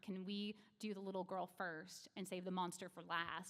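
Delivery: ordinary delivery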